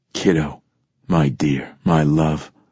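ordinary delivery

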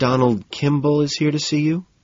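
anxious, uneasy voice. A woman announces a visitor over the buzzer, nervous. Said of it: "she says nervously".

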